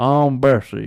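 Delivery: put-on Louisiana swamp witch voice. Joking about a haunted attraction, trying out Bessie's voice: Bessie swamp witch voice, molasses-in-mouth accent. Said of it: "like you got molasses, you know, uh, stuck in your mouth".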